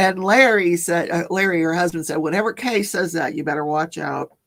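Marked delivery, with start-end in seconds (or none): none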